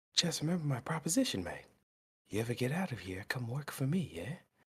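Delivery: soft, close half-whisper. In a tabletop game, a player's character half-whispers to the freed dwarf. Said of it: "I whisper in the dwarf's ear".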